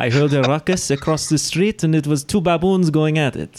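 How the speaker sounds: put-on rough mixed French-Italian accent. Voicing a man while pretending he is French: fake French-Italian accent. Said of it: "What accent is that?".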